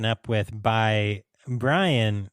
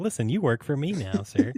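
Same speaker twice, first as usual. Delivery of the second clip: matter-of-fact, plain, with up-and-down inflection; 3 semitones higher than usual. Imitating Elmer's way of talking: Elmer voice, matter-of-fact. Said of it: "he's real matter of fact about it".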